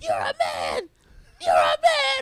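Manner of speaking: put-on very high-pitched, swooping, drawn-out holler. Retelling a man's outburst during sex: imitating someone yelling. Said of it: "But he's yelling".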